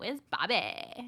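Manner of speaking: put-on California accent. Imitating the movie's characters saying the line: California accent. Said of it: "that California accent".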